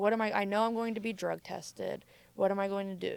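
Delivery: ordinary talk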